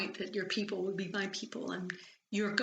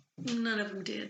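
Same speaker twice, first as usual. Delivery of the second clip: plain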